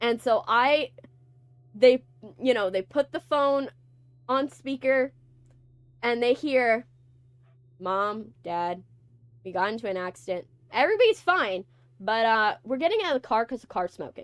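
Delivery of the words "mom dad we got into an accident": low, flat deadpan with zero emotion. Retelling a speakerphone call to Mom and Dad after an accident: acting out a deadpan call. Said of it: "I say it like that, exactly like that. I deadpanly".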